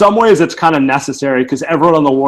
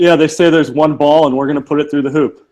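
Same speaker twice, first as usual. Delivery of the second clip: ordinary talk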